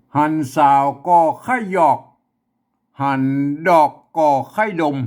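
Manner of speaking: loud northern Thai Chiang Mai accent. Reading a passage aloud in a Chiang Mai northern Thai accent. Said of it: "อันนี้คือสำเนียงเชียงใหม่แต่ยวน".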